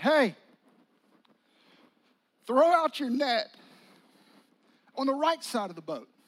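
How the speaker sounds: calling out from a distance.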